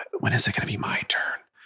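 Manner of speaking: hushed, soft, barely voiced whisper. Retelling a child's question at the blood test: imitating a whisper. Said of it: "And Avery looks at Kathy and whispers".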